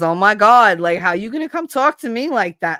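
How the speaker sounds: full-on, loud, high Brooklyn accent. Speaker explains how people hear their accent, giving an example in a Brooklyn accent. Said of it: "that's very Brooklyn".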